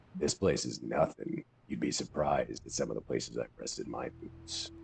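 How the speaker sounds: put-on very low voice. Mocking a voice actor told to go as low as he could, imitating a very low voice. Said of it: "Talking like this the whole time".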